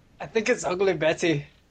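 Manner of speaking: put-on English, British accent. Asked by a co-host to repeat a line from a show in an english accent. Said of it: "Say it in an English accent".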